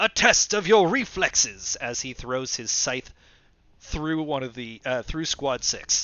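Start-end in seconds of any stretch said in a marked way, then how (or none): 0.0-1.8 very loud, high battle yell. Narrating a game battle as Xenos throws his scythe: Xenos yelling. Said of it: "and he yells".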